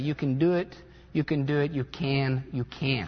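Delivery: repeated cheering in a put-on American accent. Speaker retells what a team said running up and down the field, in an American accent. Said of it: "in an American accent".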